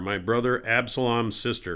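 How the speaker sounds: ordinary delivery, nothing marked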